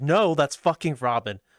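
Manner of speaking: imitated angry man's voice. Retelling what a drinking man snapped back: imitating an angry guy. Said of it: "he gets really fucking angry".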